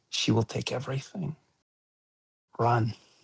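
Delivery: toneless, soft half-whispered voice. Game master's character half-whispers to a player's character, half-whispering. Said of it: "He whispers to you".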